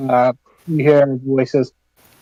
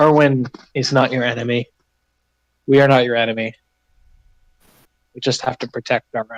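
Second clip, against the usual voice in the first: lightly hushed, confidential tone; 2 semitones lower than usual. Peering out after her husband storms past, a wife tells the player: hushed tone. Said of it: "says in a hushed tone".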